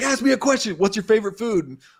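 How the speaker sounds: high, loud, frantic and desperate shouting.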